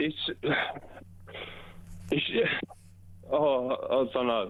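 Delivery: voice catching with emotion.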